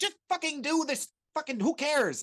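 mock very high, loud, crazed, righteous angry outburst. Praising a filmmaker's anger, doing mock righteous anger as David Lynch. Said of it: "his like righteous crazy anger when he's like".

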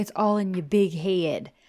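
imitated Southern accent. Speaker quotes what her mom from the South used to tell her, imitating mom's Southern accent. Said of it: "it's a really Southern accent".

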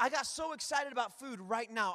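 ordinary talk, nothing marked

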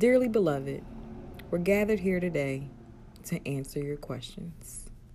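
genuine radio host announcer-style delivery. Opening the Dearly Beloved question segment, radio host voice. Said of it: "You sound like a for real radio host".

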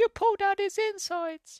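very high, slow, cute creature voice.

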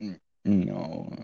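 play-acted heartfelt, sincere, earnest, genuine-sounding tone. Imitating how a sincere answer just sounded: imitating own sincere-sounding no. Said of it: "That sounded so sincere".

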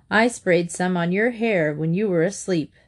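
ordinary delivery

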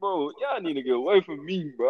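normal talking voice

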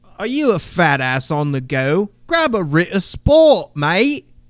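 loud, put-on English or Australian advert-style accent. Riffing on a chocolate biscuit commercial, in a put-on English or Australian accent. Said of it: "I don't know if that guy was English or Australian".

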